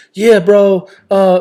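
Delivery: casual gamer-bro voice. Imitating how Dom talks while playing video games alone: imitating Dom's gamer talk. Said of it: "I'm doing a terrible job of impersonating".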